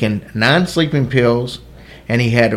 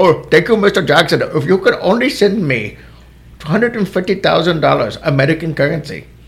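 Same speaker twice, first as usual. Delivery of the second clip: put-on Indian accent; 5 semitones higher than usual. Playing a scammer asking for money, in a put-on Indian accent. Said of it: "That's an Indian accent".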